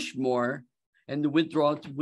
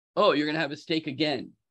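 imitated, put-on sarcastic tone. Acting out a wife's reply to her husband's order: imitating a sarcastic wife. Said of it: "being sarcastic that he shouldn't".

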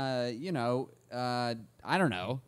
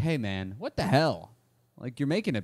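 ordinary talk, nothing marked

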